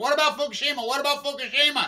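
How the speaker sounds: high, loud screaming, repeated twice. Retelling shouting a question at a political rally: retelling a scream. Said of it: "I'm screaming to Bernie Sanders".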